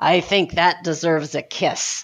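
low, rumbling, grumbled mutter. Retelling Marty's reply after his stroke, imitating Marty's low grumbling voice. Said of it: "in this great sort of low voice that he had after the stroke, this low grumbling voice".

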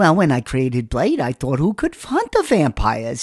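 put-on animated, old-style New York accent voice.

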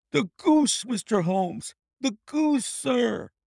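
dazed, astonished gasp, pitched very high. Narrator reads Peterson the commissionaire rushing in to Mr. Holmes: gasping in astonishment. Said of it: "he gasped".

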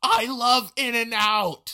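loud yell. Retelling how a girl leaned out a car window: imitating someone yelling. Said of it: "leans out the window and yells".

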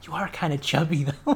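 soft whisper, slipped in on the side. Retelling a scene where a character insults you; retelling a whisper. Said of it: "And then she like whispers".

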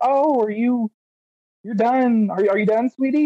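very high-pitched, disbelieving, doubting lady's voice. Retelling what the lady said after a quick test: imitating the lady at the test. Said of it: "the lady's expression, she's like".

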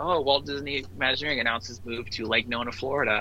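ordinary talk, nothing marked

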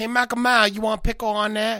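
put-on loud, high Korean accent voice. Joking on a podcast, speaker addresses Michael Myers in a put-on accent called Korean. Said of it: "that's the same voice you just did".

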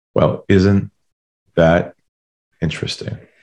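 calm, low voice. Recounting a reply to a man from a big global company: retelling in a lowered voice. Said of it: "lowered my voice".

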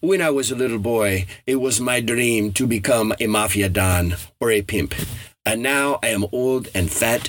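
bad, poorly done put-on Spanish accent. Quoting what a man told him, in a Spanish accent he admits he does badly. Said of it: "part of my Spanish accent".

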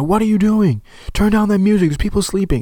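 mock very high-pitched screaming. Retelling the mother scolding kids blasting music: imitating someone screaming. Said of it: "the mother coming out and screaming at them".

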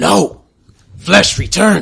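very loud, raspy, rough shrieking monster voice. Voicing a creature that screams as a door appears: screaming creature voice. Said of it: "you hear screaming from the creature".

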